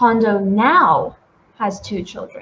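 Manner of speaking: heavy stress landing on "now". Showing how to stress an important word in a sentence: stress on now. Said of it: "We would we could stress now".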